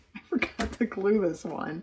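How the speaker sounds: said with a little laugh. Trimming dried pieces and finding one left unglued, laughing.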